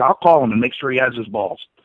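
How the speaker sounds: ordinary talk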